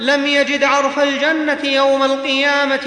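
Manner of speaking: ordinary talk, nothing marked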